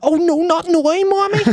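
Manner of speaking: put-on Derry accent. Imitating an actress in Derry Girls, imitating an actress's Derry Girls accent. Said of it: "whenever she's, like, in Derry Girls, she's like".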